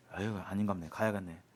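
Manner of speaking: low, soft, disappointed sigh.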